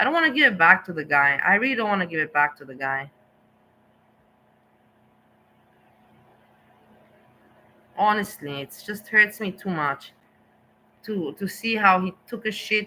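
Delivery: voice soaked in disgust. Speaking to listeners about a guy, disgusted. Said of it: "you can hear by my voice that I'm talking that very disgusting".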